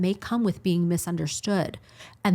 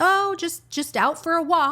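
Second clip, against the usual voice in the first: play-acted panic, very high and stumbling; 11 semitones higher, 4 dB louder than usual. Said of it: "sort of, like, panicking".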